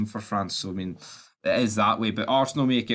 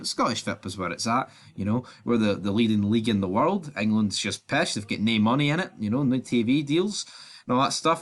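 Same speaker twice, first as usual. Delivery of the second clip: ordinary talk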